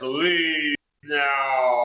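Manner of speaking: huge, booming, drawn-out voice filling the space. Using a spell to alert a buddy somewhere in the house: big booming voice. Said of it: "Big, huge, booming voice".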